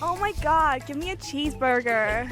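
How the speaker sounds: mock, put-on American accent. Asked for their best American accent, the speaker gives it a go: American accent. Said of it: "your best American accent?".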